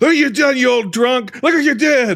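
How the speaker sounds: very high-pitched, ranting screaming. Retelling a scene, imitating a nephew screaming at an older character. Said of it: "starts like screaming at him".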